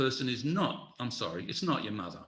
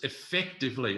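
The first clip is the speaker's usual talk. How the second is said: leaning hard on the word effectively. Advising leaders on involving others, stressing the word effectively. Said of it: "I stress the word effectively".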